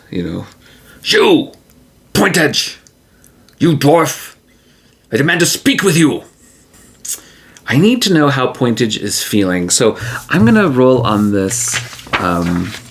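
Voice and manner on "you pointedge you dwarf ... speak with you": high, angry, confrontational yelling. Narrating a game, voicing her as she confronts the dwarf pointedge, shouting. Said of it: "she shouts".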